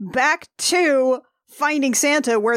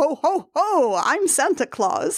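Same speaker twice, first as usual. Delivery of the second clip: slow character voice, each "ho" drawn out. Retelling a movie scene where a character plays Santa near a child: Santa Claus voice. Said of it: "while in character as Santa".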